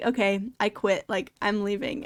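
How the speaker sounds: ordinary delivery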